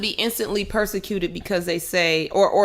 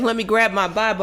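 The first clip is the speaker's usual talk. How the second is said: ordinary talk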